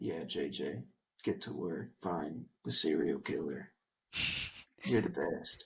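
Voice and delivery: acted dry, flat, unfeeling, very low voice. Imitating a husband who shows no emotion: imitating flat emotionless delivery. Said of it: "him having no emotion".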